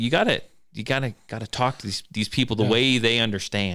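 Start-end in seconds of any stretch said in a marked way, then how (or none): none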